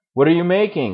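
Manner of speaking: loud, high shout. One of the cave people calling to a silent stranger, shouting even louder. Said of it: "another shouted, even louder".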